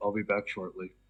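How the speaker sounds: dry, flat, expressionless deadpan delivery. Voicing a character leaving the prisoners: deadpan voice. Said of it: "With the same deadpan voice".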